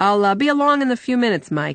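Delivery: cheerful, bright tone. A man answers a companion as he leaves, cheerful. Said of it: "Dehir said cheerfully".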